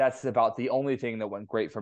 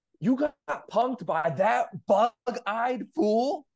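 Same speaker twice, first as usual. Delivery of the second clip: re-enacted scream, much higher pitch; 12 semitones higher than usual. Speaker retells their reaction when a guy's picture came up, retelling own scream. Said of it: "I literally screamed".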